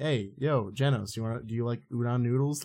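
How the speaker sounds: acted nonchalant, unbothered, offhand casual tone. Imitating a hero who isn't taking a fight seriously: imitating Saitama not taking it seriously. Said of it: "he's just not taking it seriously".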